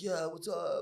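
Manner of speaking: high, floating, easygoing stoner voice. Imitating young Keanu Reeves in the old Bill and Ted: young stoner Keanu Reeves impression. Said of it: "stoner kind of vibe".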